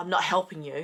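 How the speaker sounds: ordinary talk, nothing marked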